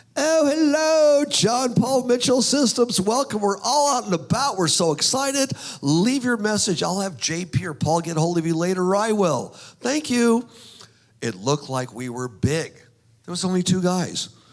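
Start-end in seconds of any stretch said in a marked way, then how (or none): 0.1-10.4 put-on British accent, pitched way up high. Retelling a friend's answering machine greeting: imitating a British accent. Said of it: "lady with a British accent".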